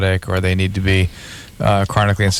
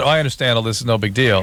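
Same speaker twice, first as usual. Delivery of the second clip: ordinary talk, nothing marked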